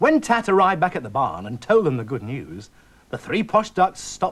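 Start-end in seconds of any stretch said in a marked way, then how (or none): none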